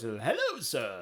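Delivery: put-on typical British butler accent. Describing a robot character from a video, doing Codsworth voice. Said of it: "typical butler voice that's British".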